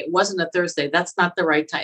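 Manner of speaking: plain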